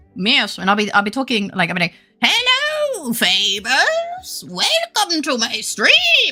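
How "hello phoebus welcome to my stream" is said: put-on very high-pitched, very slow old woman voice. Imagining herself as an old woman greeting a viewer: put-on old lady voice. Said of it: "I'll be an old bird".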